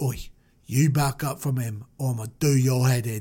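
put-on low-pitched voice in a British accent.

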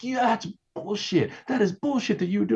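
play-acted very high, shrill screaming. Recounting the publicist and Ashton confronting him in a hallway, retelling their screaming. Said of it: "he and Ashton are both screaming at me like".

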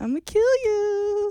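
mock cheery menace, very high and slow. Retelling how she threatened a kid in class, imitating a smiling threat. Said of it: "with a smile".

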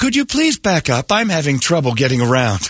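polite car voice. Retelling a driverless car asking other cars to move: imitating a polite car voice. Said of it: "this voice goes".

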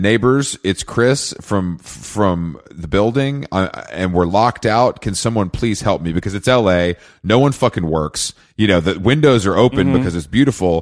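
ordinary talk

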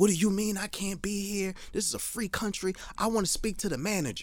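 put-on woman's voice, angry ranting. Retelling a woman's outburst at police who told her to leave: imitating a woman going off. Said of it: "She goes the fuck off".

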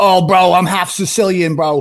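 put-on macho tough-guy voice. Mocking how he talks to the media: macho Cuomo impression. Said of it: "always this, like, macho".

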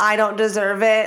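ordinary talk, nothing marked

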